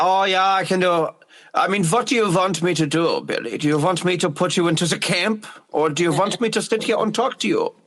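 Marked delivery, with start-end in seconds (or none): 1.5-7.7 put-on Irish accent, faster. Asked to show off accents, the speaker performs one: irish accent. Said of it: "Your fucking Irish accent's really good".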